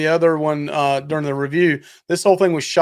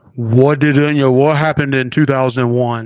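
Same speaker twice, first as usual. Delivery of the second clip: put-on deep movie trailer narrator voice, louder; 4 dB louder than usual. Describing typical movie trailers, imitating a deep-voiced trailer narrator. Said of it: "a guy with this really deep voice and is like".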